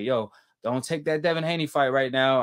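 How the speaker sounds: usual speaking voice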